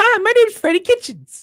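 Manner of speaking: really high-pitched put-on voice. Joking that a certain name has to be said this way: really high-pitched voice. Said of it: "say in a really high-pitched voice".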